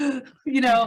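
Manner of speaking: loud, high, panicked gasp.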